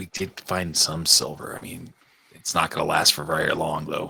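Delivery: very low, hushed mutter under the breath. In character, answering a merchant who raises his rates: muttering under breath. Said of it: "under my breath".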